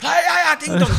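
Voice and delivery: high, loud, belted announcer voice impression.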